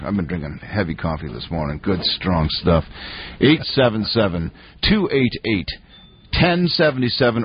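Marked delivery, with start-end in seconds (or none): 3.4-7.5 slow, deliberate, carefully paced, spelled out. Repeating a phone number for listeners to call, slow and deliberate. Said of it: "I'll say that slower".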